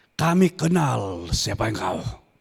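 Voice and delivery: very low, sunken devil voice. Speaker quoting the devil's words when facing Jesus, in a devil voice. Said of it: "Sudah tahu kalau begitu suara setan".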